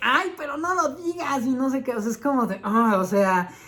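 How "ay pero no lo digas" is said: high, pitched-up, annoying little-fish voice. Retelling how Flounder spoke in the play: imitating Flounder's annoying voice. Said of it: "Flounder con esta voz así de que".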